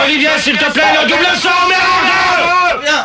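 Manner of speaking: high, slow, furious, angry shout.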